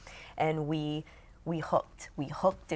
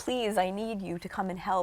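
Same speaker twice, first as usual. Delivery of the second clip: put-on tearful pleading, higher; 3 semitones higher than usual. Retelling past live videos asking people to help: imitating her past crying plea. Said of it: "I would be crying".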